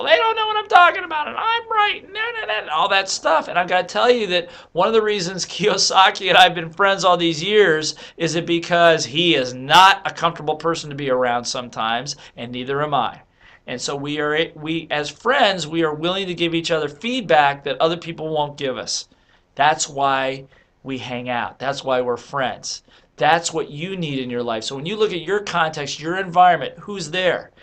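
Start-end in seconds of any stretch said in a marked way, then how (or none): 0.0-3.5 high-pitched little squeaky voice. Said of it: "your little voice goes".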